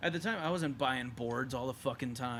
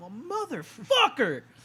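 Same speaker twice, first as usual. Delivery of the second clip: put-on kid voice yelling, much higher, louder; 11 semitones higher, 10 dB louder than usual. Retelling being hit in the forehead at eleven, speaker quotes himself: retold high-pitched kid voice. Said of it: "fucking high pitched ass voice".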